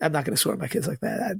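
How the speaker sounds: ordinary talk, nothing marked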